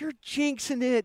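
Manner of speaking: scolding tone. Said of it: "Bisaccia just lights into me".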